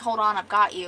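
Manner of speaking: ordinary talk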